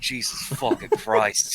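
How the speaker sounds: low, grumbled mutter under the breath. Voicing a character at a crowded table: muttering under his breath. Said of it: "under his breath".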